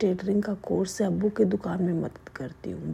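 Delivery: ordinary delivery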